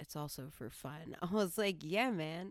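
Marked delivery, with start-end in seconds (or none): 0.0-1.1 hushed, confiding whispered aside. Telling a story, the speaker quotes what a man whispered to him, whispered. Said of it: "And then he like whispered".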